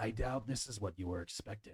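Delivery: metallic voice sounding run through a filter. Narrating a scene, a figure turns to the listener and speaks: metallic filtered voice. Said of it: "says in a voice, a metallic, like filtered voice".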